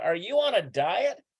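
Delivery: plain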